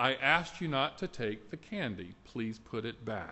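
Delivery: firm yet gentle tone. Retelling a mother telling her son to put candy back: imitating a firm but gentle voice. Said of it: "in a firm but gentle voice".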